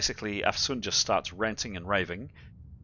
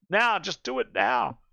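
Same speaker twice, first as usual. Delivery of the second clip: frantic, all-out panicked screaming; 4 semitones higher, 4 dB louder than usual. Voicing a game character who starts screaming again, screaming. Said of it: "And she just starts screaming again".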